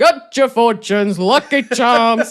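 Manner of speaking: loud, slow Texan drawl. Retelling a film scene with a character in disguise: imitating Little John's Texan drawl. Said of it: "a Texan drawl".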